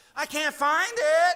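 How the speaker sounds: loud, whiny voice. Husband retelling how he asked his wife for help, in a put-on whiny husband voice. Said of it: "you give your best whiny husband voice that says".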